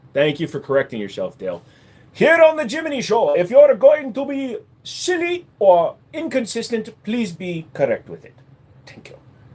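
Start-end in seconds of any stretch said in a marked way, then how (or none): 2.1-9.1 very high, swooping, wandering put-on Indian accent. Host thanking dale on the jiminy show, drifting indian accent. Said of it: "It started Indian, and then it went somewhere else".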